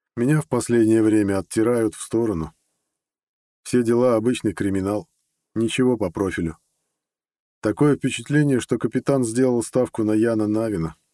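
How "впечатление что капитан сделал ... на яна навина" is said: ordinary delivery, nothing marked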